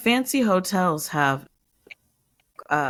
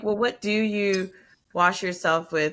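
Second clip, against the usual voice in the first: ordinary delivery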